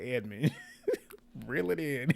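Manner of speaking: creaky voice, laughing through the words.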